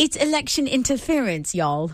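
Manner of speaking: put-on British accent. Asked to redo the computer guy's line, the speaker tries a British accent. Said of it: "now do it with a British accent".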